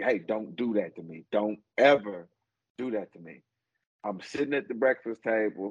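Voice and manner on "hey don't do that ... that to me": put-on firm, stern fatherly voice. A father recounts scolding his youngest daughter over a prank, retelling stern dad voice. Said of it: "give her the stern dad voice".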